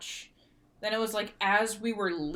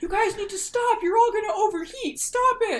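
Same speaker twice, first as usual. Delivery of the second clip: very high, shrill, loud shout; 8 dB louder than usual. Retelling how a parade coordinator yelled at a marching band, imitating someone shouting. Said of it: "shouting like".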